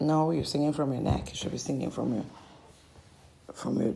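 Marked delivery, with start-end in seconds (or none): none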